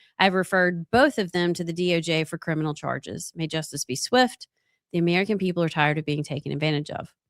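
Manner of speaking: ordinary talk, nothing marked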